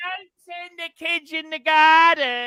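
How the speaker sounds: high, loud, laid-on London accent.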